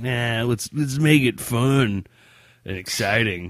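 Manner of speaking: high-pitched, loud, slow, mock-excited eager voice. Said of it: "And they're like".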